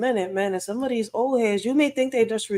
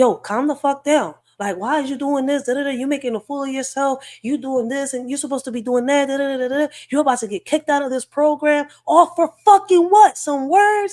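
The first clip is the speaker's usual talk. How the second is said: loud, furious, angry rant with hard cussing; 4 semitones higher, 5 dB louder than usual. Retelling an old head cussing and coming at them hard: imitating someone cussing angrily. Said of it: "this old head was cussing and coming at me hard".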